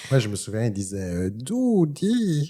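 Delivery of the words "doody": high, little talking toy creature voice. Recalling the Furby toy's own language, imitating a word: Furby voice. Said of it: "T'as vu ça, l'imitation?".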